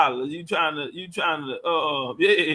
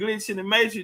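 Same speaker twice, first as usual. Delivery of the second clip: ordinary talk, nothing marked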